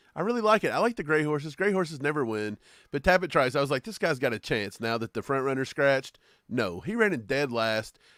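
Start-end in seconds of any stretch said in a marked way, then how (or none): none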